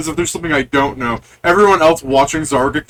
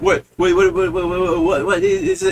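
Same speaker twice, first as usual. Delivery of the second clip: put-on little old gnome voice; 3 semitones higher than usual. Voicing a small old gnome who opens the door: small old gnome voice. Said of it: "you see a small old gnome".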